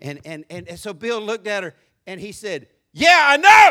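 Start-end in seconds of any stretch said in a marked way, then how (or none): 2.9-3.7 put-on shout, much higher, louder, slower. Retelling how a man answered being told he has anger issues: retelling a loud shout. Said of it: "that volume just told on you".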